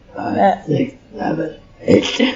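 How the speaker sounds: put-on evil demon voice. Showing the group the demon voice again: demon voice. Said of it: "Enjoy my demon voice".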